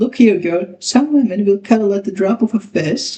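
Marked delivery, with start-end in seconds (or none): none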